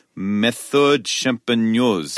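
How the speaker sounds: put-on, attempted French accent, possibly not convincing. Asked what a wine label says, reading it aloud in a French accent. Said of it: "if that's my French accent".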